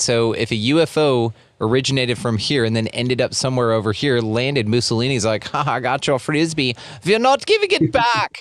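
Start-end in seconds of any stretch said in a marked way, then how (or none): 5.5-8.4 high, swooping, sing-song put-on German accent. Act out Mussolini after a UFO lands on his side, in a German-sounding Mussolini impression. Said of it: "that sounded a bit more German than Italian".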